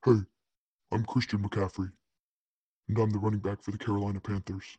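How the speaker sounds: put-on sci-fi deep voice. Show the listeners the voice your co-host hated, introducing yourself as a player in a super deep voice. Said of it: "We got to do the super deep voice".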